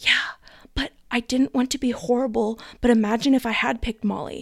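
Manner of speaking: imitated whisper. Retelling a reality show challenge, quoting one participant: imitating a whisper. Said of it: "Jess whispers back".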